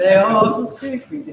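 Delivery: plain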